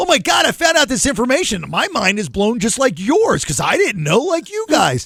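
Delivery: gushing, amazed, high, swooping, mind-blown excitement. Describing how a man did not say it, in mock amazed excitement. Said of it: "it's not like".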